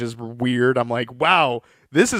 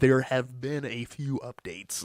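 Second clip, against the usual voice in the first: put-on American accent; 10 dB quieter than usual. Retelling a film scene, quoting Walter in his stereotypical American accent. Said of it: "like very stereotypical American accent".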